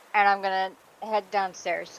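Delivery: ordinary delivery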